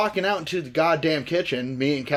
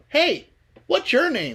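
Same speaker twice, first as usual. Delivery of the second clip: put-on girl's voice, higher; 9 semitones higher than usual. Retelling a voice heard on the first night in bed: imitating a girl's voice. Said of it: "And some girl's voice".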